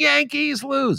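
mocking, teasing emphatic stress on Yankees lose. Teasing a yankees fan guest: emphasizing yankees lose, mocking. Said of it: "There's a reason I'm emphasizing".

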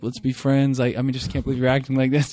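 mournful, high, plaintive pleading tone. Retelling a fight while secretly taping it: imitating own past plaintive tone. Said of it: "suddenly very, like, plaintive".

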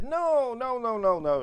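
put-on high, emphatic Italian accent. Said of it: "in an Italian accent, obviously".

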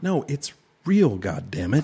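mock anger, put-on angry tone. Insisting to the other speaker that the show is real: playing angry. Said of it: "You seem very angry about this".

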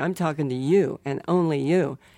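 usual speaking voice

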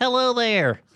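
very high, squeezed, pinched puppet voice. Showing how the puppet Buford counts: Buford squeezed voice.

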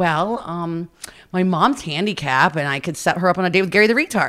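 ordinary delivery

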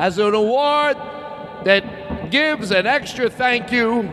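put-on grand announcer voice. Pretending to present an award at a podium, mock grand podium announcer. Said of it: "as I stand at the podium".

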